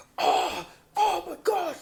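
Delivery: high, loud scream. Retelling a housemate losing at Smash Bros at night: imitating someone screaming. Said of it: "he would be screaming".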